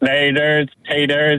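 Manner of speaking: low, mechanical robotic voice. A caller, asked by the host to say goodbye, in a robot voice. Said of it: "Say goodbye in your robot voice".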